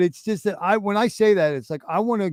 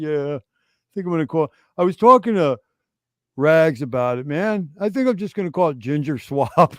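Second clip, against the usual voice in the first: mock low-key, matter-of-fact, offhand casual tone. Retelling a friend's offhand remark, imitating Torin's understated talk. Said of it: "he's real understated".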